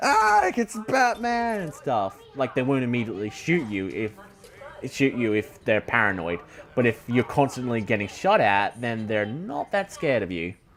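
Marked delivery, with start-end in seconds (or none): 0.0-1.6 high, slow startled mock scream. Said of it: "take a quick step back and scream".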